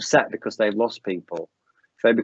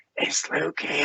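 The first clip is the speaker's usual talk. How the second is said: hushed stage whisper meant to carry across; 4 semitones higher, 6 dB quieter than usual. Retelling how a receptionist whispered across the classroom, imitating a whisper. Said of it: "whispers across the classroom".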